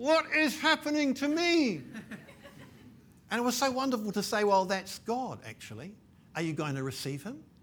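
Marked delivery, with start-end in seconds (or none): 0.0-1.8 slow, high words forced through gritted teeth. Speaker recalls a man in a suit asking them: retelling words through gritted teeth. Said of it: "through gritted teeth saying to me".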